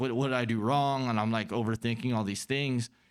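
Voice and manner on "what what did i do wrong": acted panicked outburst. Retelling confronting roommates about being poisoned: imitating own past freaking out. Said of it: "I start freaking out".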